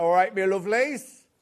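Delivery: put-on Cornish accent. Introducing Dan to the listeners and doing his voice, imitating Dan's Cornish accent. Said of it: "He's got a Cornish accent".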